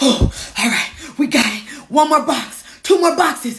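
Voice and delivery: breathless, puffing and panting, out of breath. Retelling carrying boxes alone and counting them down: imitating own huffing and puffing. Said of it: "huffing and puffing".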